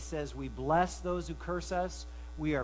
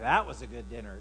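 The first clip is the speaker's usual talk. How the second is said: mocking, sarcastic, insincere praising tone; 6 semitones lower, 3 dB louder than usual. Example of sarcasm about a dinner, said in a sarcastic tone. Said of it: "she would kind of know just from the tone of voice and the way I said it that maybe I didn't like the dinner".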